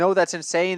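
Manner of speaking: normal talking voice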